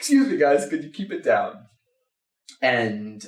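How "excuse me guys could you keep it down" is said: put-on heavy, sing-song German accent, laid on thick. Retelling a stranger asking his group to keep it down: thick German accent. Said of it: "in a thick German accent".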